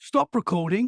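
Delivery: put-on British accent. Recalling the spirit box on a podcast, quoting it in a British accent. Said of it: "it said like in a British accent".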